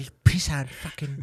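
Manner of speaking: put-on angry Irish voice. Showing how drunk Irish people sound, doing a mock-angry McGregor drunk rant. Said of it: "You sound like a bit like a leprechaun".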